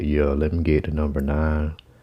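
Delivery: deep put-on voice, forced down low. Retelling ordering at a drive-thru: imitating own deepened voice. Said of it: "I make my voice deep".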